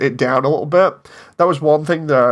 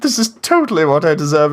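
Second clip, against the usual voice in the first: smug, self-satisfied, utterly pleased-with-himself gloating; 2 semitones higher than usual. Imitating how Papyrus sounds in a line, self-satisfied Papyrus. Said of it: "he sounds like he's so satisfied with himself".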